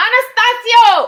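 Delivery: very high, piercing, loud scream. Calling out to a son playing a game with headphones on: screaming a name. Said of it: "I didn't mean to scream in your ear".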